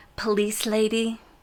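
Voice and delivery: put-on sweet small-child New Zealand accent. Retelling a four-year-old boy's call to the police: cute new zealand accent. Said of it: "in a very cute New Zealand accent".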